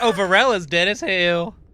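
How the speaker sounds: very loud, high, put-on Southern accent. Retelling what he said when someone was looking for Varel, in a southern accent. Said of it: "a southern accent".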